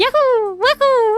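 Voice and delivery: whooping way up high. Retelling the sounds of a video game: Mario voice. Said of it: "it was just Mario Galaxy going".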